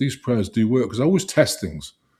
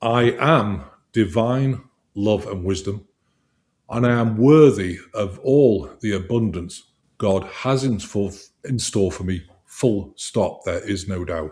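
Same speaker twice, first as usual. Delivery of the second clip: slow, firm, authoritative tone with full conviction. Leading listeners in an affirmation, said with authority. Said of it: "and say it with authority".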